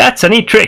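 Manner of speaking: very high, sharp cry out. A game master voices an unseen figure calling out from the fog, sharp voice. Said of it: "you hear this sharp voice call out".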